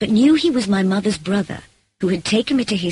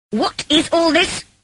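very high, indignant, angry tone; 9 semitones higher than usual. Reading a novel aloud, someone appearing at the door demands an explanation: angry demand. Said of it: "Demanded an angry voice".

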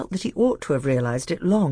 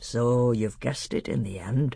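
usual speaking voice

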